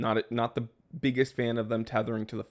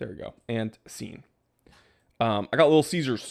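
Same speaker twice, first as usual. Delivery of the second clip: ordinary talk, nothing marked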